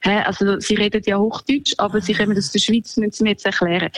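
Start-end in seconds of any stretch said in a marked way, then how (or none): none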